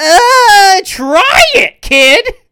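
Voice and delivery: very high, very loud, shrill swooping yell, "uh" drawn out. Retelling a cartoon scene about drinking alcohol, imitating Scratch. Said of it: "and Scratch is like".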